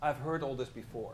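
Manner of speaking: ordinary talk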